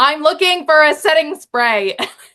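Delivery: screaming, loud and shrill. Retelling shouting at a man in the middle of CVS, retelling own screaming. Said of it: "I'm like screaming at this point".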